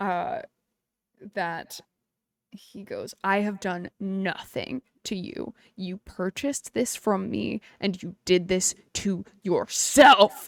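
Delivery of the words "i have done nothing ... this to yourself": huge, deep, booming dragon voice. Narrating a being shocked at the disrespect in his home: deep draconic voice. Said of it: "deep, draconic sound".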